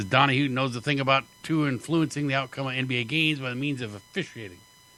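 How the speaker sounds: ordinary talk, nothing marked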